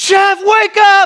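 very high, loud, urgent scream. Retelling waking the sleeping driver as the car leaves the road: imitating someone screaming. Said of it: "screaming at him".

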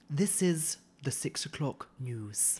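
put-on very refined Scottish lady's accent. Describing the accents on a recording, quoting a lady in a posh Scottish accent. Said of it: "this very posh Scottish lady said".

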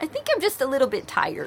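put-on high, worn-out, crying toddler voice. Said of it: "finally she says".

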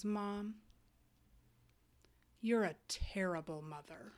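soft, grave, earnest and dead-serious voice. Retelling what a three-year-old said from across the table: imitating a son, very serious. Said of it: "with the most serious little face".

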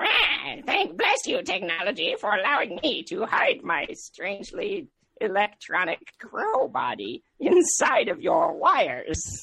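pitch up and swooping. Returning to the voice used earlier in the show, Creepy Crowman voice. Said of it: "the voice that I was doing earlier for Creepy Crowman".

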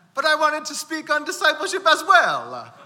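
put-on very high, loud, swooping, sing-song Italian accent. Continuing to quote a pastor after the speaker's discipleship message: Pastor Mario in Italian accent. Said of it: "This is my Italian accent".

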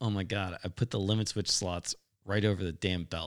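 ordinary talk

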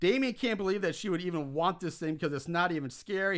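ordinary delivery

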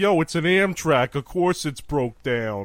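put-on loud, slow New Jersey accent, train conductor voice. Imagining the ticket taker answering a passenger: New Jersey ticket taker voice. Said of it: "and the ticket taker's like".

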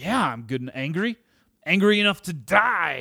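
high, sulky, petulant, "die" stretched out. Retelling Jonah's answer to a repeated question about his anger, acting out a petulant reply. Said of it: "you just hear this petulance in his voice".

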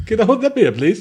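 proper, polite British schoolboy voice. Trying for a polite Canadian voice in a beer joke, lands in proper British schoolboy accent. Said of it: "That's proper British schoolboy".

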